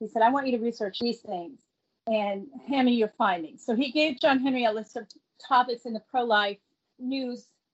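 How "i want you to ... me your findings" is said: ordinary talk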